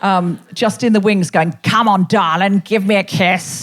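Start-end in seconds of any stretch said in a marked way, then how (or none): 1.6-3.6 put-on old-fashioned, leering, chauvinist charmer man's voice. Comedian recalling someone in the wings, impression of an old pre-Me Too man. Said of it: "like some old pre-Me Too man".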